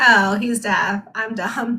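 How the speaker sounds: put-on slow words spoken through laughter. Retelling her remark after honking the horn, imitating someone laughing while talking. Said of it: "she was laughing".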